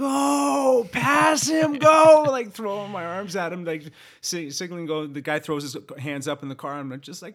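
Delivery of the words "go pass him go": very loud, high, slow, drawn-out full-lung scream. Retelling urging a driver to pass a cyclist, retelling a top-of-lungs scream. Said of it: "I'm like screaming at the top of my lungs".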